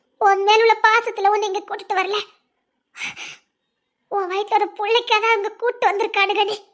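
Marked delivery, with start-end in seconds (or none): none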